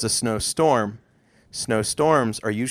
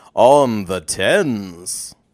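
loud, put-on game show announcer voice; 6 dB louder than usual. Explaining a counting game to a partner, announcing its name in game show host voice. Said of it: "In my favorite game show voice".

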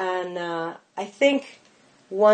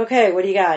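real New York delivery and manner; 5 dB louder than usual. Retelling what a book agent said at a meeting, imitating a new york agent. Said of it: "she's real New York".

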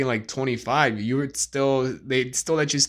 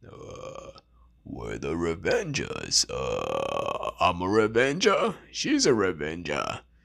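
very deep, drawn-out voice swooping way down; 8 semitones lower, 4 dB quieter than usual. Teaching how to do voice impressions: Thor. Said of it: "here's, uh, Thor".

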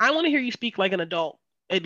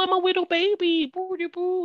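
very high, put-on baby talk voice; 11 semitones higher than usual. Mimicking people who do the baby voice at folks, put-on baby voice. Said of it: "people sometimes think they can do the voice at folks".

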